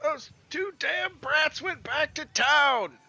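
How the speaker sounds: very high, raging, furious yelling outburst. Game master voices Orden as the players hear him flipping out and yelling. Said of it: "flipping out and he yells out".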